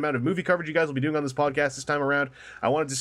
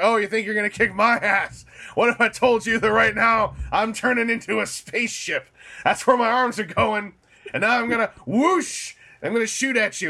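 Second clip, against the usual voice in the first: pitched-up robot villain voice, voice lifted; 7 semitones higher, 4 dB louder than usual. Acting out a dubbed cartoon scene as Megatron: Megatron voice. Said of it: "And Megatron's like".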